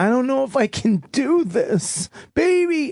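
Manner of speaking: very high, slow, drawn-out weeping plea. Retelling what the woman in labor said to the speaker, imitating someone crying. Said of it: "She she looked at me crying".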